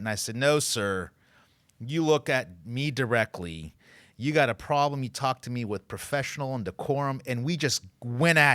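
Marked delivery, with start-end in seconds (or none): none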